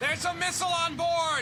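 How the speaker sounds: very high, piercing, shrill, nasal yell. Discussing voice acting, the speaker quotes a character's yelled line: shrill quoted yell. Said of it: "is so shrill".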